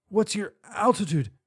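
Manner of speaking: put-on wheezy voice. An injured woman being helped off asks a question, wheezing. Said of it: "she wheezed".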